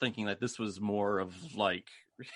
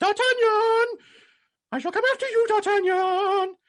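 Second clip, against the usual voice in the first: very high, very loud, shrill belted falsetto; 11 dB louder than usual. Recapping a fight scene, quoting the character Gerard: Gerard's falsetto voice. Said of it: "he has the most falsetto-y voice".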